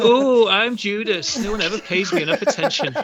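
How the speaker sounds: shrill, very high, loud put-on voice. Insulting Judas to his face, the speaker mimics him: mocking Judas impression. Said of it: "one hundred percent not what I sound like".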